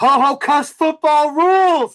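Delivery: very high, shrill, loud screaming battle cry. During a role-playing game, a player describes an attack with a screaming battle cry. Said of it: "I'm going to scream".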